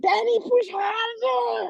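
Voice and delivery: high-pitched screaming.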